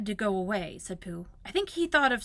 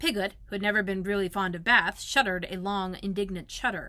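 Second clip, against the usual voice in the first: ordinary delivery, nothing marked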